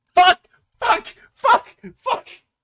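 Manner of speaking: very high, shrill, full-volume yelling. Player rolls a natural one while the guards might hear, shouting. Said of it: "I'm just shouting this at this point".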